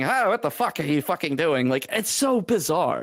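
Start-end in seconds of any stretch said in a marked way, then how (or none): none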